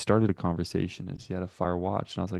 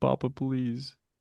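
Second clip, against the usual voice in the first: put-on tearful, high, crying child voice; 5 semitones higher than usual. Acting out a tired kid begging a parent who reads quant: mock crying plea. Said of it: "Kid's just, like, crying".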